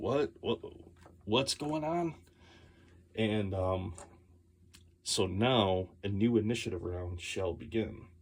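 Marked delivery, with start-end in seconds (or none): 0.0-2.2 just-woken voice, much higher, slower. Game master voices the illusionist waking first after sleeping, Phineas just woken up. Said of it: "He wakes up first like".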